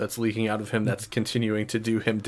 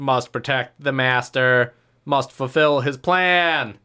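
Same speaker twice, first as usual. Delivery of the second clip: loud, slow acted battle yell, "plan" drawn out; 3 semitones higher, 7 dB louder than usual. Voicing a creature protecting its master in a fight: yelling in character. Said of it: "he yells".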